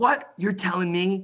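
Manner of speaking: mock indignant, high-pitched, outraged disbelief. Retelling how a friend's aunt scolded him about a party: imitating an outraged aunt. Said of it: "She was all up in arms about it".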